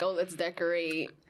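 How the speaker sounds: ordinary talk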